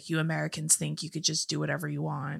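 soft, put-on Russian accent. Retelling what he said in his office the next day, in a russian accent. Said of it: "in like his Russian accent was like".

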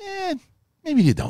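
very high, pure wiseguy voice. Imitating a four-year-old asking to be taken to school: Silvio from The Sopranos voice. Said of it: "reminds me of, uh, uh, Silvio from The Sopranos".

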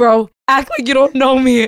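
slow emphatic delivery. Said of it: "repeated slower for emphasis".

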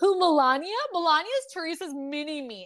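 catty, disapproving voice. Recounting what a woman who does not like Teresa said, imitating someone's bad tone. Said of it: "she's obviously saying that in a bad tone".

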